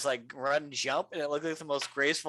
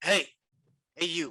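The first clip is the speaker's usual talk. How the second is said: calling voice; 3 semitones higher than usual. Player in a game addressing a dog, shouting at a dog. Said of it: "I shout at the dog and be like".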